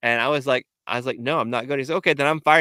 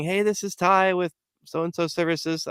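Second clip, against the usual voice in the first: put-on, loud, high, calling-out yell; 5 semitones higher than usual. Retelling opening a door after no answer to knocking: imitating own yell. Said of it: "and I'm yelling".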